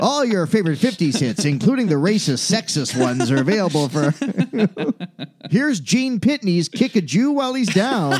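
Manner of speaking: salesy commercial ad announcer voice.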